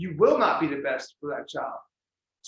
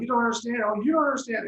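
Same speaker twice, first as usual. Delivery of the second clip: heated, high-pitched screaming; 7 semitones higher than usual. Describing real fights they had, the speaker imitates someone screaming. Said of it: "these are really going like screaming like ah".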